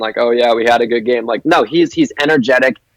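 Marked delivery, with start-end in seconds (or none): 0.2-1.2 mock flat monotone voice, no inflection. Describing a player by contrast with typical athletes in post-game interviews: flat monotone athlete voice. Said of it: "is very monotone".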